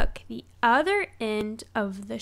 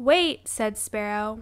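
ordinary delivery

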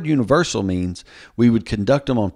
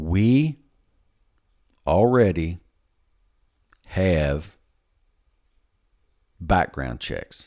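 slow, halting, carefully enunciated word by word; 4 semitones lower than usual. Speaker with a southern drawl stating a point, slow, careful enunciation. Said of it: "I'm going to say this real slow".

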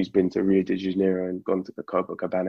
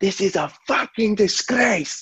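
very high, slow, deliberate shout; 13 semitones higher than usual. Retelling a friend's reaction as a team loses badly: imitating a shout. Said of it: "he shouts to the whole pub".

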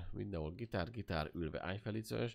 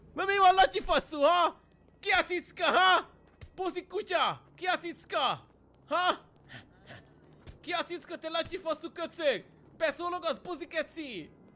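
aggressive taunting shouts, much louder, higher pitch; 11 dB louder than usual. In a roleplay, a gangster character taunts someone he calls latyi, taunting gangster shouting.

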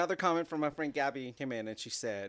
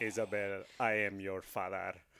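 deep, low-pitched villain voice with a Mexican accent; 6 semitones lower, 4 dB quieter than usual. Speaker retells how someone greets Isabelle at night, in a Mexican-accented Darth Vader voice. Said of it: "That's like Darth Vader with the Mexican accent".

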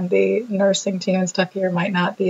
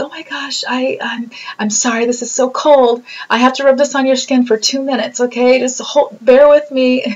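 mock really bubbly, cheerful, happy chatter; 5 semitones higher, 5 dB louder than usual. Retelling the nurse who accessed the speaker's port: imitating a happy bubbly voice. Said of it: "just like a happy, really bubbly voice".

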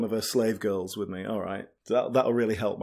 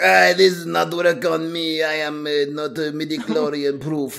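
alien creature voice, slightly higher pitched; 5 semitones higher than usual. Retelling a movie scene, the creature answers a Jedi's demand, Watto impression. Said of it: "That's a good impression".

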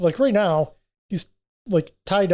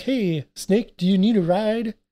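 dopey, dim-witted, dumb and simple voice; 4 semitones higher than usual. Retelling a movie scene where Eddie offers Snake a ride: talking stupid like Eddie. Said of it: "I always have to talk stupid like him".

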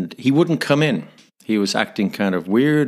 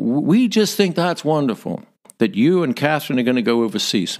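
clumsy, bad put-on American accent; 4 semitones higher than usual. Recalling a message left on the full answering machine, use a bad american accent. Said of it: "forgive my bad American accent here".

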